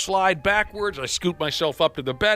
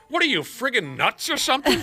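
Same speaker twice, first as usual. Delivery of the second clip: mock incredulous, baffled scolding woman's voice; 5 semitones higher than usual. Retelling a woman's reaction to his outburst: imitating a woman's incredulous scolding. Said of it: "she looks at me and goes".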